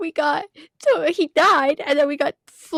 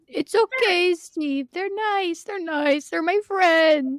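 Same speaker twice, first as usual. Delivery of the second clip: tearful speech, crying throughout. A character answers Steve's questions about being there, crying. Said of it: "Then why are you crying?".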